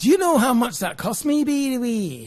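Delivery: put-on Scottish accent drifting toward Scouse. Imitating how Scots talk after mentioning a Scotsman, put-on Scottish accent. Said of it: "that sounds like a Scouser".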